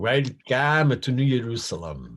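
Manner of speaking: misplaced emphasis across welcome, New Jerusalem. Imitating a man from a Public Theater play, stress on wrong syllables. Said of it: "he talked like this, ... put the emphasis on the wrong".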